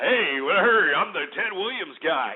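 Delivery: put-on radio announcer voice. Talking about a news report, mimicking the man in it: Ted Williams radio voice. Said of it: "I've got a radio voice".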